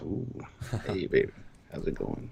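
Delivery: silky smooth, soft, breathy whisper. Reacting to a message, the speaker puts on a greeting: smooth voice. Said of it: "Hashtag smooth voice".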